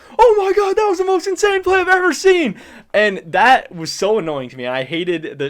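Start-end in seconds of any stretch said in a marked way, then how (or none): 0.2-2.6 fake-hyped, very high, shrill, loud scream. Retelling how a caster screamed over a minor kill: imitating Freak screaming. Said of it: "Freak is just screaming".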